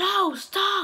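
very high-pitched shouted yell. Retelling a man jumping out to warn him, the speaker is retelling a yell. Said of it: "he yells".

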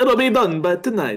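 bad put-on Italian accent. After being asked why he sounded Italian, repeating the line in a bad Italian accent. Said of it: "I can't do an Italian accent either".

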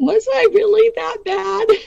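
put-on very high, whiny, childish little girl voice. Recalling asking someone about their own behavior: put-on little girl whiny voice. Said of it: "In my little girl whiny voice".

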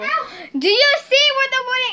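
yelling at high pitch. Looking for a bag with her friend after making slime, yelling at her friend. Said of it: "I'm yelling at her".

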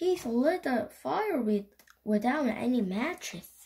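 ordinary delivery, nothing marked

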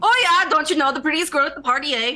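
very high, loud put-on Canadian accent. Joking about being the prettiest girl at the party: put-on Canadian accent. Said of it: "In Canadian, is this offensive?".

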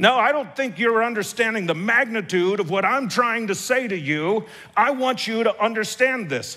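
fake stern anger, trying hard. Retelling what he insisted to the group after their reply, put-on angry voice. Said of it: "tries to put on his best angry voice".

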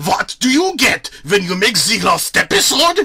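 put-on weird, angry German accent. Narrator voicing Fozzie Bear on stage, weird angry German accent. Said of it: "with a weird, angry German accent".

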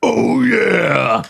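very loud, raucous, rough booming holler. Showing off a new impersonation to the group, Kool-Aid Man impression. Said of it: "It's the Kool-Aid man".

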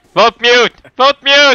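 loud, projected calling-out voice.

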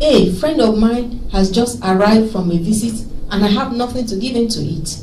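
ordinary delivery

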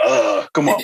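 groaning, groan-like protesting speech. Retelling a first reaction to an article: imitating own groan. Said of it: "I immediately groaned".

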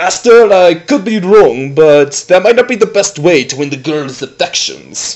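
put-on gracious, suave French accent. Speaking to the master, suave French maître d' voice.

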